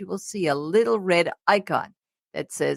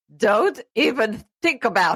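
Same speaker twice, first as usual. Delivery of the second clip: heavy, big put-on German accent; 4 semitones higher than usual. Retelling how a woman warned off thieves in Manhattan: big German accent. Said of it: "in her big German accent say".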